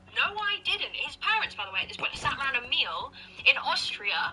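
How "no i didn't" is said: imitated own shouting voice. Retelling an argument about leaving the gas on: retelling own shouting.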